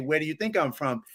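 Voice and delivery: ordinary talk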